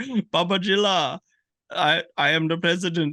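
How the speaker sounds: mock broken Indian English accent. Retelling a movie character's lines: imitating broken Indian English. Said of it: "random Indian guy with such broken English".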